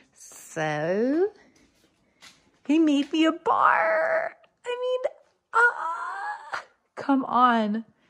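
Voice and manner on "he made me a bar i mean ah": high, slow, overjoyed squealing excitement. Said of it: "I'm so excited".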